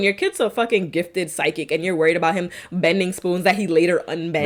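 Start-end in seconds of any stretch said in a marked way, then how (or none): none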